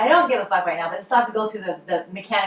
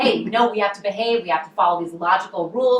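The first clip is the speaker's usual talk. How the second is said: usual speaking voice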